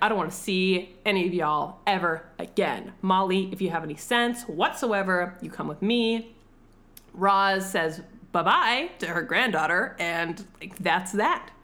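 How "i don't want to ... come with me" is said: ordinary talk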